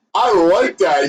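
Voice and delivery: chuckling, laughing through the words. Voicing a druid who was just tossed a piece of gold, laughing while talking. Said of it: "the druid starts laughing and goes".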